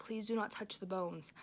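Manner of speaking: ordinary delivery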